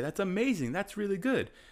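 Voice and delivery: high, excited, enthusiastic praise. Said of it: "And I say".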